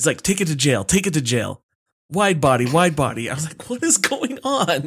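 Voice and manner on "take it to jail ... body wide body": put-on heavy, thick New Jersey accent. Recalling a basketball coach's slang he'd never heard, thick New Jersey accent. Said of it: "coach was like this guy from like New Jersey with a super thick accent".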